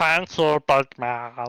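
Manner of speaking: disturbing, unsettling creature voice. Voicing Terp, sitting in the corner snacking on a ration, disturbing Smeagol-like voice. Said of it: "Sounds disturbingly like Smeagol for my liking".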